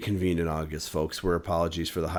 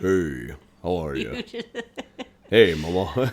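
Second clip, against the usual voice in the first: goofy, hammed-up voice with swooping pitch. Showing the others his goofy deep Johnny Bravo voice. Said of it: "my my deep voice is just goofy sounding".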